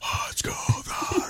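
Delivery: whispered, breathy, dying last gasp.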